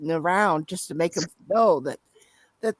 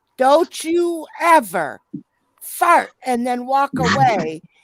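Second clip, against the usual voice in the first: screamed scolding, high and loud; 5 semitones higher, 6 dB louder than usual. Retelling what the speaker's mother screamed at the father down a store aisle: imitating someone screaming. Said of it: "she's screaming down the aisle".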